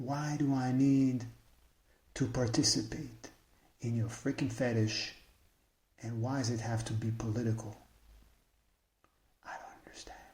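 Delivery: whispering. Venting to listeners, the speaker asks their questions whispering. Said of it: "I don't know why I'm whispering".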